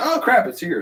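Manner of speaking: high, excited exclamation, blurted out.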